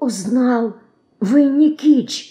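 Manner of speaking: frightened whisper. A boy, held by the shoulders, answers an old man into his ear: frightened whisper. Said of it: "испуганно шепчет ему на ухо мальчик".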